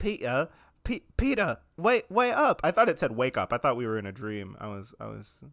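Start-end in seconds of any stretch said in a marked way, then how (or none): 0.0-2.6 high-pitched exaggerated British accent. Speaker calling out to Peter, really offensive British accent. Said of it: "I'm just gonna do a really offensive British accent".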